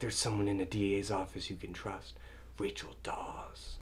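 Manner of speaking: intimidating, hushed whisper, barely voiced. Describing Batman's first meeting with Gordon, quoting his line in a Batman whisper. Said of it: "he's doing this whisper".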